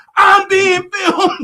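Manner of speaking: high, piercing, shrill scream at full volume. Retelling how a lady in a store reacted: imitating someone screaming. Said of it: "she's screaming in the store about".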